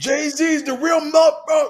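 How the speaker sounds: shouting. Retelling a random man on a crowded train: imitating a stranger yelling. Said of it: "he just started yelling out of the nowhere".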